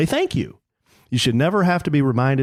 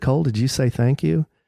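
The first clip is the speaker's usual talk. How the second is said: put-on whispering voice. Retelling a question asked in the van on the drive home: retelling a whisper. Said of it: "So I just kinda whisper to Cole".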